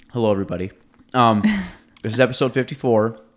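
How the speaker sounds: speaking around food, chewing, mouth full. Opening episode 54 while eating an apple. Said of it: "Sorry, I'm eating an apple".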